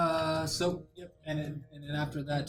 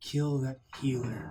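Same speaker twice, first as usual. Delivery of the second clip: hushed, whispering monster voice. Voicing a creature appearing behind a player: whispering monster voice. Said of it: "He's gonna whisper".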